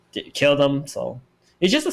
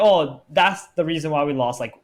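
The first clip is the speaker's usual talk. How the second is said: ordinary talk, nothing marked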